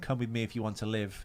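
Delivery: plain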